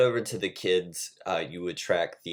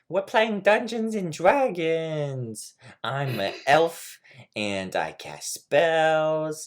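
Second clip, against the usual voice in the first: put-on very high, babyish toddler voice, "Dragons" drawn out; 9 semitones higher, 4 dB louder than usual. Retelling what a young girl playing Dungeons and Dragons said, toddler-like child voice. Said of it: "Why does she talk like a toddler?".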